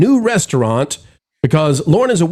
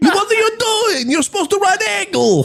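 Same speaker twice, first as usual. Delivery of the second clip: fake Russian accent, pitched very high. Recalling scolding Wizard at a Dollywood ride: put-on Russian accent. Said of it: "we put on Russian accents".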